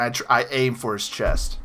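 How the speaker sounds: normal talking voice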